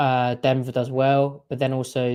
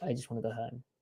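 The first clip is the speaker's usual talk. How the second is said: very soft, dejected, miserable mumble. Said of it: "And they're like".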